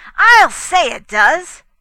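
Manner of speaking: booming, very loud, slow, unthinking-sounding delivery. Agreeing with a man's remark without thinking, in loud agreement. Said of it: "Fay agreed loudly".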